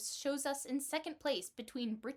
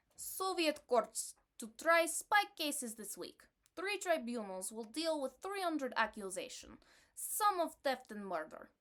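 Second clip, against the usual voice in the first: shaky, less-than-great put-on Russian accent. Asked to read a news item aloud in an accent, put-on Russian accent. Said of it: "my Russian accent is less than wished for".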